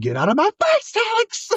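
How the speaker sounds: very high shout, swooping upward. Retelling a show scene where a sister yells at her brother: imitating a yell.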